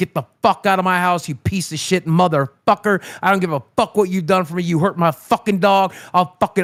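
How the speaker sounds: put-on furious, angry outburst. Retelling ordering a man out after he hurt the dog: imitating himself going off in anger. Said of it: "I went the fuck off".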